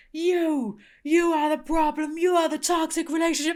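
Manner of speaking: mock full yell. Retelling the wrestler pointing out a kid in the crowd: imitating John Cena yelling. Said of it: "It's John Cena's just yelling at him".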